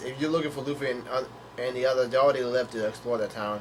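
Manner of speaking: plain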